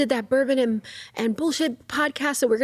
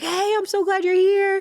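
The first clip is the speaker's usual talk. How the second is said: thrilled, gushing, super excited delivery, pitched up; 9 semitones higher than usual. Retelling how the gym owner greeted him at the door: imitating someone super excited. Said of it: "Super excited, right?".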